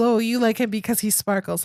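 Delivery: ordinary talk, nothing marked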